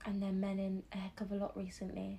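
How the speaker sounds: speaking in a whisper. Joking with a co-host about men, whispering. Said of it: "Ronke's whispering?".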